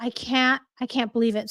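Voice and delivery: trembling, shaken voice from shock. Reacting live to just-breaking news: shaking with shock. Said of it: "I don't know if you can tell from my voice, but, like, I'm, like, shaking right now".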